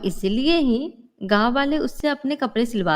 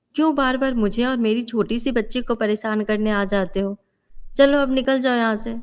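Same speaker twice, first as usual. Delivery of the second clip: ordinary delivery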